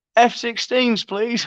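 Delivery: put-on high-pitched, drunken-sounding, slurred-style voice. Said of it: "fucking pissed off his head".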